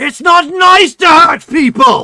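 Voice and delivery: booming, very loud, high voice from above. Narrating a scene, voicing someone calling from just outside, booming voice. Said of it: "a booming voice".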